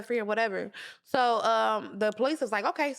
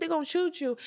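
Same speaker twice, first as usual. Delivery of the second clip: put-on tearful crying voice, higher; 5 semitones higher than usual. Retelling a police stop: imitating her own past crying. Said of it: "I'm in tears".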